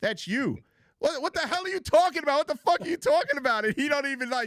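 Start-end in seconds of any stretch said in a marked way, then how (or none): 0.0-3.6 high, annoyed, exasperated and fed up. Retelling what the wife said about the video: imitating the wife's annoyed retort. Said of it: "she's like".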